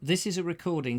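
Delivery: ordinary delivery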